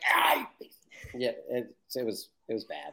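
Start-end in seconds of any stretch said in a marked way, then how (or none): 0.1-0.8 hushed, breathy whispered outburst. Retelling acting a fight with a stranger on the phone: imitating own past screaming. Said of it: "I have to go scream at, at a stranger".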